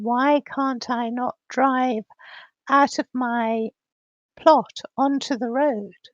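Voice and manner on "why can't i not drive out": usual speaking voice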